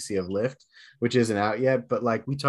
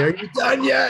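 mock shrill, very high, loud shout; 14 semitones higher, 5 dB louder than usual. Retelling what the older daughter shouted at the end of an episode: imitating a shout.

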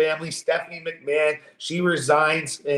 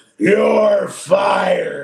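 loud, rough-edged, forceful delivery; 3 semitones higher, 6 dB louder than usual. Quoting a famous firing line: Vince McMahon voice. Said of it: "You can do a good Vince McMahon".

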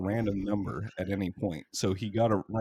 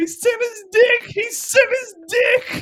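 mock very high, very loud shrill laughing-crying shriek; 11 dB louder than usual. Retelling what he said at the door, imitating laughing and crying. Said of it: "It was like hilarious, like crying, laughing".

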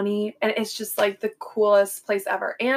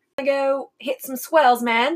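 put-on Australian accent; 4 semitones higher, 4 dB louder than usual. Asked for their best accent, the speaker tries Australian; Australian accent. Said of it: "I'm not going to speak in that accent anymore".

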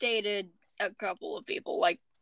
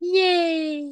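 mock-cheery, sarcastic, drawn-out, high "yay"; 6 semitones higher, 4 dB louder than usual. Reacting to the next segment being toxic exes: sarcastic cheer. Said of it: "It's meant to be sarcastic".

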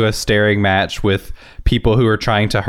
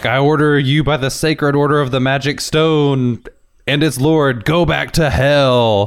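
mock troll scream, pitched up, "hell" drawn out; 5 semitones higher than usual. Retelling a movie scene, quoting one of the troll people: imitating a troll screaming. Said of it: "starts screaming".

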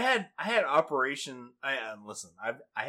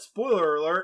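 plain

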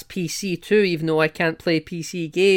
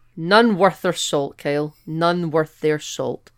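ordinary talk, nothing marked

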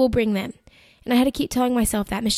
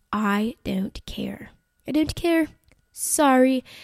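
very slow, drawn-out, sassy, dismissive tone, acted out. Retelling what was said to the team: mock sassy tone. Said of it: "I didn't say it sassy".

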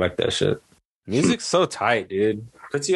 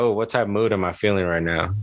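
ordinary talk

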